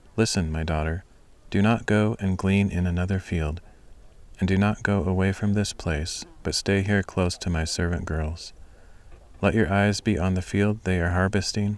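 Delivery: plain reading voice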